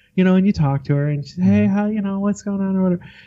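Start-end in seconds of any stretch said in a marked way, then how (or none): 1.5-3.1 sugar-sweet, sugary, friendly voice. Imitating a friend greeting someone: imitating a friend's sweet voice. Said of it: "such a sweet voice".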